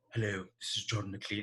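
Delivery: put-on soft Scottish accent. Introduce yourself as the Scotsman named as a dream makeup artist, in a John McClean voice. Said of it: "he talks like this with the lower teeth showing".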